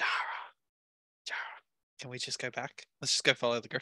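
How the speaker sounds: hushed, breathy whisper. A player whispers in character to dara: whispering. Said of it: "I whisper".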